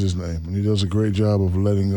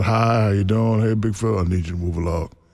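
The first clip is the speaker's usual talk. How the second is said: ordinary delivery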